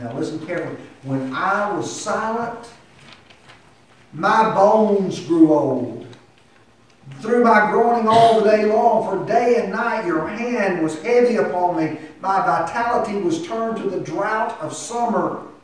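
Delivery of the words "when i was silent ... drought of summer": pained voice, pitched higher and louder. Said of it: "Do you hear the, the pain in David's voice?".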